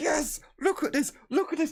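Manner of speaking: thrilled, very high, loud, joyous excitement. Narrating a player's find during a game, acting out joyous excitement. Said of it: "a moment of joyous excitement as".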